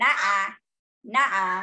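nasal two-note nuh-uh crow call. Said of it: "he's very nasal".

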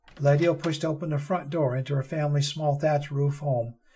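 ordinary delivery

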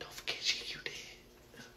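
quiet, hushed whisper. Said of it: "shit just started whispering to me".

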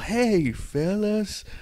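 high-pitched put-on American accent. Discussing a trailer, the speaker imitates Conor McGregor trying to sound American. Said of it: "Tried to sound a bit American".

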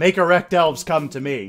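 loud shouted call. Retelling a game moment, leading a player into a trap, retelling saying it very loudly. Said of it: "And so very loudly".

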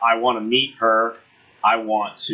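plain

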